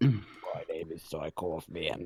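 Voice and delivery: very rough, gravelly put-on voice. Introducing himself to friends, in the gravelliest voice possible. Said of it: "the groveliest voice I can do".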